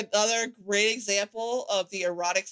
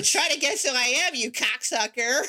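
put-on little baby voice, higher pitch; 3 semitones higher than usual. Doing a voice that was meant to scare people, little baby voice. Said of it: "I got a little baby voice".

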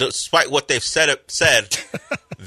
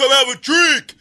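very high-pitched, hollered bellow; 12 semitones higher, 4 dB louder than usual. Retelling how another speaker called across rooms: imitating a bellow. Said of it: "he would bellow at me".

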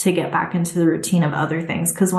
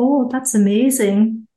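put-on Scottish accent, pitched up; 5 semitones higher, 4 dB louder than usual. Quoting her housekeeper's reaction to the tidied utensil drawer; scottish accent. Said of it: "in her Scottish accent".

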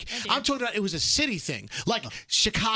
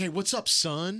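put-on street slang voice. Recalling how people walked around greeting each other, in an urban slang voice. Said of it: "that was your urban voice".

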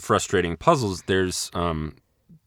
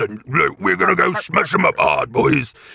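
put-on orc voice, much higher, louder; 8 semitones higher, 5 dB louder than usual. A player showing the others how the orcs they play talk, orc voice. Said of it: "they talk like this".

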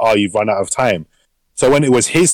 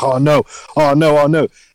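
acted confidence draining into slow, drawn-out nervous panic; 4 semitones higher than usual. Retelling a show's scene as the character's time runs out: imitating someone getting very nervous. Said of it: "starts getting very nervous".

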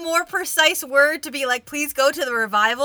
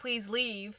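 play-acted hushed, very quiet, barely-there soft voice; 5 semitones lower, 18 dB quieter than usual. A tabletop player recounts trying to get stragglers to go, retelling a loud demand. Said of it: "make my voice loud and be like".

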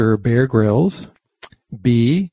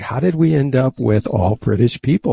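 plain

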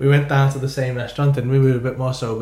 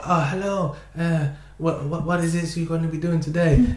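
imitated Italian accent; 4 semitones higher than usual. Retelling how the man at a little coffee bar greeted them each morning, imitating Simone's Italian accent. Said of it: "I shouldn't keep doing the accent".

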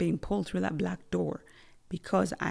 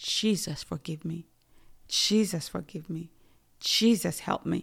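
mock, desperate, pleading crying out. Retelling falling into a lake of fire: imitating own desperate crying out. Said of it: "So I'm crying out so desperately".

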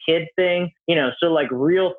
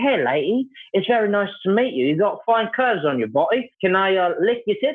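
put-on British accent, pitched higher. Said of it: "I got my British accent, and I could do something like this".

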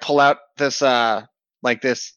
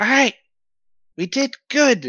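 squeaky-high imitation woman's voice; 11 semitones higher than usual. Voicing a character who speaks to a waking bird: imitating her voice. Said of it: "he says in, uh, her voice".

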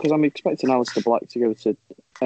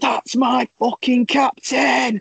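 mock very high, very slow, drawn-out drunken-sounding scream; 12 semitones higher than usual. Retelling cheering a goal in a bar: retelling a drunken scream. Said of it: "I started screaming".

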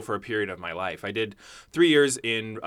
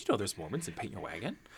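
very soft, hushed little grandma voice; 2 semitones lower, 14 dB quieter than usual. Recalling a grandma's remark about a musical, imitating my grandma. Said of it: "that's my impression of my grandma".

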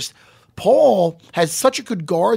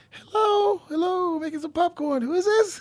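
put-on girl voice, much higher; 11 semitones higher, 5 dB quieter than usual. Acting out a creepy phone call scene, playing a girl home alone. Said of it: "I'm going to play just like a girl home alone".

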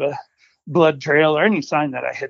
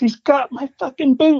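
put-on very high, shrill screaming yell; 10 semitones higher, 3 dB louder than usual. Retelling a shout after a wolf grabbed a boot: imitating a scream. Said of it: "he screams".

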